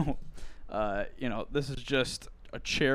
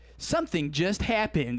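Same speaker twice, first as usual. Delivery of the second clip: woman's electronic voice, much higher pitch; 5 semitones higher, 4 dB louder than usual. Describing kids' TikTok videos to a listener, doing the TikTok computer voice. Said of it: "that TikTok computer voice that's like".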